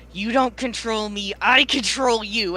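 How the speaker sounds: slow, loud, forced out through gritted teeth. A character with a frozen arm glares at the rune in their hand, through gritted teeth. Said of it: "glaring at the rune through gritted teeth".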